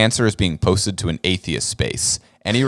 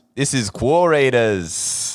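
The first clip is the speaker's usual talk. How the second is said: made-up Australian accent; 4 semitones higher than usual. Asked by the co-host to give their best try, speaking in a fake Australian accent. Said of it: "I would make up a fake Australian accent".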